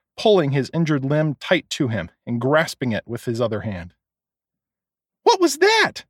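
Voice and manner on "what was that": shrill, very high-pitched screaming cry. Brandy cries out in the store: screaming. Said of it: "screamed Brandy".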